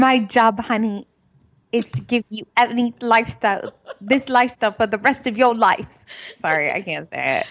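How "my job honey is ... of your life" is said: put-on British accent. Retelling what PK said, in PK's British accent. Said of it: "Let me get my British accent".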